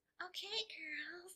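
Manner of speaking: very high, squeaky voice. Retelling how her daughter imitates her: imitating a squeaky voice.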